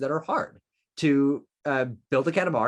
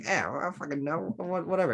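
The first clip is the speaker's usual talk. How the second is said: light, casual, tossed-off put-on Australian accent; 4 semitones higher, 4 dB quieter than usual. Describing a talking animal in a game, in a little Australian accent. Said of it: "talking in a little Australian accent".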